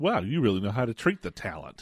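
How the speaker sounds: put-on condescending tone. Asking whether the line was said this way, imitating it: condescending Bill Murray impression. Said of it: "like, real condescending".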